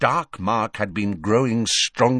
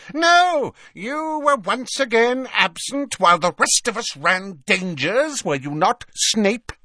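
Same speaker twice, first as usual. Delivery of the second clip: furious, enraged, angry voice; 12 semitones higher, 3 dB louder than usual. Bellatrix rounds on snape during an argument with her sister; furious. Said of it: "said Bellatrix furiously".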